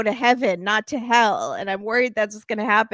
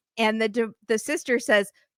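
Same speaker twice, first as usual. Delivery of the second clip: plain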